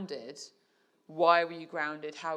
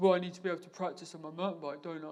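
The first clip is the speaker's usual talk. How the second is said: put-on teenage boy voice. Retelling a talk with a boy about practising his tricks, in a teenage boy voice. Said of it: "that's my teenage boy voice".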